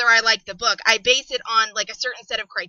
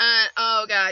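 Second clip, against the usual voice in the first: usual speaking voice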